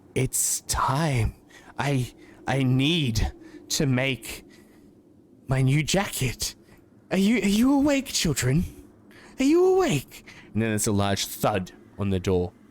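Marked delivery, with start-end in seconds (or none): 0.2-10.3 slow, raspy voice of a woman around fifty. Game master voicing a woman behind a door to players, raspy fifty-year-old woman's voice. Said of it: "a fifty-year-old woman's voice, sort of raspy".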